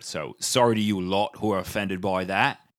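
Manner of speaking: put-on English accent. Podcast host addressing listeners who say football, fake English accent. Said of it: "That accent could get me into Juilliard".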